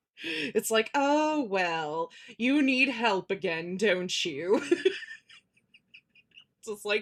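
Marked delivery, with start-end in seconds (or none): 0.9-4.6 slow, snide, rude, sarcastic computer voice. Recalling the show's computer answering the dog's typed request for help, mock-sarcastic computer voice. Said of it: "the computer was so sarcastic and rude".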